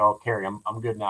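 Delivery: ordinary talk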